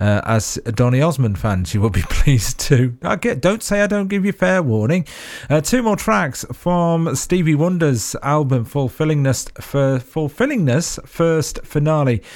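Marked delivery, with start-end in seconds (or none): 9.6-12.2 slow, careful, deliberate enunciation. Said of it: "give it time to pronounce that".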